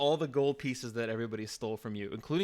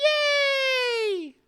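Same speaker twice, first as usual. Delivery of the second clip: shrill, booming, very high, drawn-out cheer; 10 dB louder than usual. Voicing a lit match as it cheers: little match cheering. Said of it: "It starts to cheer".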